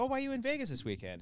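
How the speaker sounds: high-pitched, quick, curious tone.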